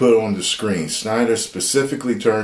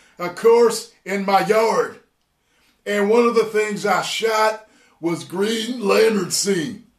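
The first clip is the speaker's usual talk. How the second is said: put-on pissed-off wrestler voice, higher; 12 semitones higher than usual. Reading out a director's quote about a film: Stone Cold Steve Austin voice. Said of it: "I'ma read it like Stone Cold Steve Austin".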